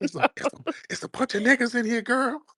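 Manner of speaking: put-on frightened whisper. Teasing another speaker about sounding like a victim, imitating a victim's whisper. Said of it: "you got one of them victim whispers".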